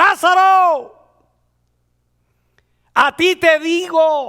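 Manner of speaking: very loud, high, slow, booming godlike shout. Retelling how he arrived to call out to a dead man: retelling a commanding shout. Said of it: "para gritarle con voz de Dios".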